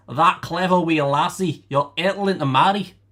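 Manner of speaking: attempted Scottish accent. Reading a dictionary example sentence aloud; attempted scottish accent. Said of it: "I can't do accents, but I tried".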